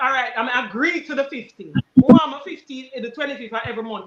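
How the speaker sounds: ordinary delivery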